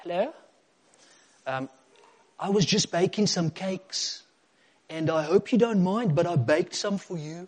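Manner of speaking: put-on Afrikaans-accented speech. Retelling Magda bringing cakes to her mother Janice, imitating Magda's Afrikaans accent. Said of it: "In an Afrikaans accent".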